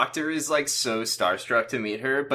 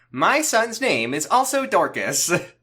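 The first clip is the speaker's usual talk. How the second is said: high, swooping, drawn-out, sing-song put-on online-video voice; 7 semitones higher, 4 dB louder than usual. Imagining a line about a son's name in TikTok voice. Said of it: "I'm imagining this in in that one TikTok voice".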